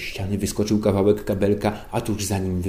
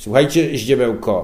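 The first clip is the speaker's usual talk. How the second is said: loud, patronizing, condescending voice; 4 semitones higher, 7 dB louder than usual. A character opens a talk with a man just summoned, condescending tone. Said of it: "Protekcjonalnym tonem zaczął Śmigły".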